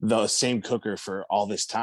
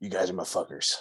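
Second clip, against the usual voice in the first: rough, low, growly whisper; 2 semitones lower, 4 dB quieter than usual. Recounting to someone what they whispered while hugging the group: retelling a low, growly whisper. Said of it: "whispered in a low, growly voice".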